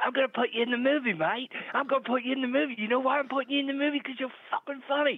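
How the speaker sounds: put-on Australian accent, pitched well up. Retelling how a big producer offered you a part in his movie, in a put-on australian accent. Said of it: "That was a good accent".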